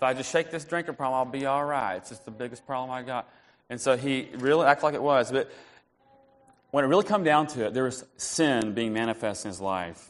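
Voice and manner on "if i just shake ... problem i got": imitated southern drawl, put-on. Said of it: "He has a southern drawl".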